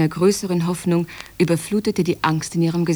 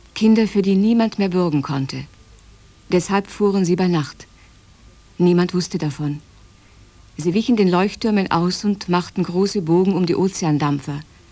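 ordinary talk, nothing marked

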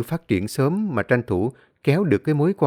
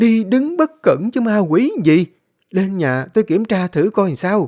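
high yelling outburst at the top of her voice; 8 semitones higher, 4 dB louder than usual. A woman answers a man who blames ghosts, yelling. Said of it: "Bà Thu Hoài gào lên".

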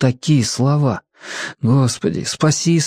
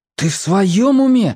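high, drawn-out, frightened, agitated; 5 semitones higher than usual. Marko reacts to Kira talking about dying: frightened, agitated. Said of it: "перепуганно взвинтился Марко".

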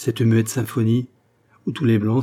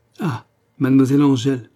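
satisfied smiling exclamation, louder; 3 semitones higher, 4 dB louder than usual. Told who has learned his verses by heart, René exclaims with a satisfied smile. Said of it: "s'écria René avec un sourire de satisfaction".

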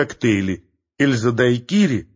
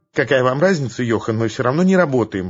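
ordinary delivery, nothing marked

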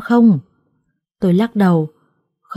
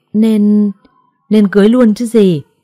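louder, raised delivery. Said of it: "Gì mà bà lớn tiếng vậy?".

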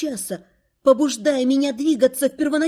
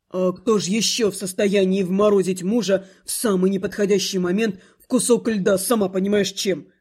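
low, displeased grumble with a snort; 6 semitones lower than usual. The husband answers his wife's question, grumbling with a displeased snort. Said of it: "Буркнул в ответ Рид с недовольным фырканьем".

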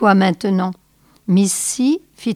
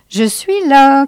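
loud, high-pitched calling out; 7 semitones higher, 7 dB louder than usual. A man arriving with a large pistol display announces himself, called out.

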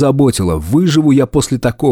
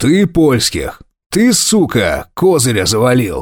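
barking with swooping pitch. The gang leader grabs the captive by the hair and barks in his face. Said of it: "рявкнул прямо в лицо".

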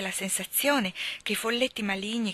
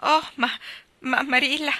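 stammering, chattering teeth, higher, louder, slower; 6 semitones higher, 6 dB louder than usual. Narrator reading Anna's reply to Marilla, stammering, teeth chattering. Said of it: "balbettò Anna battendo i denti".

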